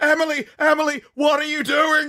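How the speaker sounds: mock shrill, high, loud, frantic panicked screaming. Describing a Twitch clip, the speaker retells people in the back screaming. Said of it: "people in the back started screaming".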